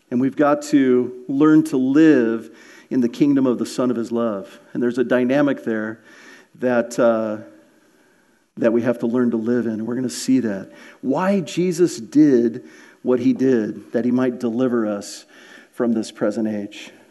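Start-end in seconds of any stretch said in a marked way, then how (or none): 11.0-16.9 voice dropped totally deeper. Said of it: "Did my voice just, like, get totally deeper?".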